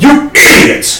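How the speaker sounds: slow, high-pitched yelling. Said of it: "I'm going to yell".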